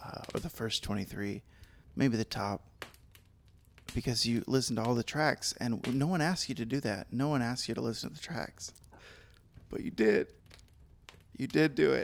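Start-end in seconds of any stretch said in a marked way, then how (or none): 7.1-12.0 choked-up voice, close to tears. Thanking a fan who listened to all the tracks: mock emotional, about to cry. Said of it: "now I'm getting emotional about it".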